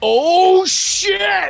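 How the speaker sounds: put-on loud exclamation. Retelling what dad yelled in the crowd: imitating dad's loud exclamation. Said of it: "This is what I hear from my dad in the crowd".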